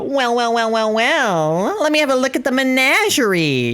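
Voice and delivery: very high cartoon voice, each "well" stretched out. Showing what Spinel's manner is like, doing a Spinel voice. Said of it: "The Spinel is more like the, ... that's more Spinel's thing. I can't keep that voice very long".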